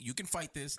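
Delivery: normal talking voice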